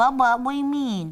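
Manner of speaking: babyish put-on baby-talk voice. Imitating people who think their partner is mad at them; baby voice. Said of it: "people use a baby voice sometimes".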